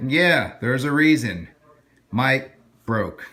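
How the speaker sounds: flat, direct delivery. Previewing a line he plans to say, deadpan delivery. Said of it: "direct deadpan line that I'm going to say".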